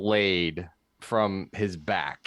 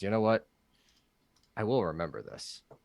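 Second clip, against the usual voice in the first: soft, nice half-whisper, just loud enough to hear; 5 dB quieter than usual. A player speaking as Phoenix to a figure as he dissipates, half-whispering. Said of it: "This is a very nice whisper from from Phoenix".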